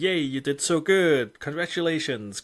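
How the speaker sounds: put-on high, loud, patronizing cheer, as to a child. Describing how apps congratulate users like a child: mock patronizing praise. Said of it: "they tr- congratulate you like a child".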